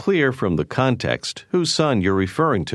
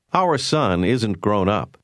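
usual speaking voice

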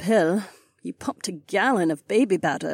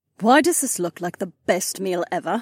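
plain reading voice

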